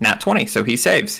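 ordinary talk, nothing marked

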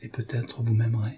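almost inaudible. Speaking to him almost only for herself, barely audible. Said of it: "si bas qu'à peine s'entendit-elle elle-même".

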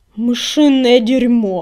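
hissed, hissing words. Narrator reads the line of a fighter who has just pounced on his foe, hissing. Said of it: "прошипел коготь".

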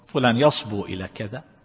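ordinary talk, nothing marked

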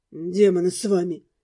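hoarse, husky voice edged with desperate despair. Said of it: "Дамиан хриплым голосом говорит".

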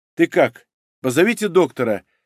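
ordinary talk

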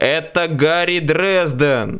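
called out, as over a bad line. Over a crackling phone line, the narrator calls to the other end; shouted. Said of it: "прокричал я".

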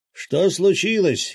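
high, shouted, yelled delivery. A man leans his head out of a window and asks, shouted. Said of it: "крикнул Васильич".

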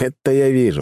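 snorting, smirking tone. Reading a story, the first-person narrator replies to a wounded man, with a scoffing snort. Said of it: "хмыкнул я".

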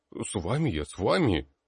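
scared, yielding, high, slow frightened voice. Grabbed by the robe by the count's son and told to pick sides, he answers frightened. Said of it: "испуганно произнес Маршуш".

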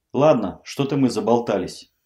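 ordinary delivery

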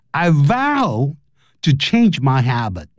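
ordinary talk

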